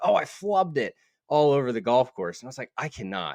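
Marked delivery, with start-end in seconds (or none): 0.0-0.9 play-acted exasperated kid voice, hollering, pitched up. Recalling a kid who yelled all over the golf course, imitating a kid yelling. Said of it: "he was just yelling".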